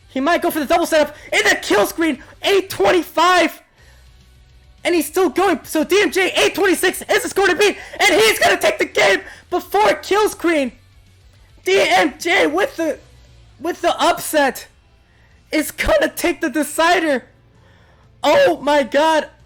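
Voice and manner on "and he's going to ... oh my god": voice cracking mid-yell, hoarse and excited. Commentator calling an upset win in the deciding game, voice cracking. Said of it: "my voice is cracking right now".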